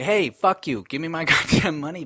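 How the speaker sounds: put-on angry yelling. Retelling a phone fight with a woman from an airline, retelling an angry yell. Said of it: "Like I was fucking yelling".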